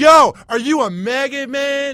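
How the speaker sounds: very high, loud, slow, drawn-out jeering taunt. Retelling what a guy in the gym said to him: imitating a stranger taunting him.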